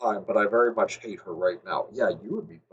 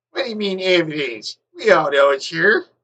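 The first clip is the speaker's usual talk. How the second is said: deliberately annoying, silly put-on voice, high and slow; 7 semitones higher, 6 dB louder than usual. Reading a line aloud for a character: annoying put-on voice. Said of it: "Why are you giving him a voice? Like, an annoying voice".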